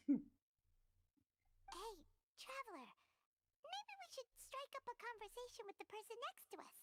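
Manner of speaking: loud, failed stage whisper. Suggesting to a traveler they talk to the person next to them: terrible attempted whisper. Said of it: "You're fucking terrible at whispering".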